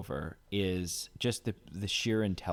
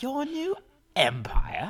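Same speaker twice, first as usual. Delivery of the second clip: mock, very high, swooping, sassy and sarcastic; 5 dB louder than usual. Repeating the quoted line with disbelief: mocking Obi-Wan line. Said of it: "are you that stupid?".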